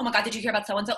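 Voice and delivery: put-on heavy, thick New York accent, rattled off rapidly. Describing a play's first scene, acting out the character's line: fast thick New York accent. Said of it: "going that fast with like thick New York accents".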